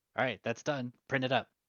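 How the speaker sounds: put-on angry voice. Describing a man mimicking a voice from his past, mimicking an angry voice. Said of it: "mimic an angry voice from the past".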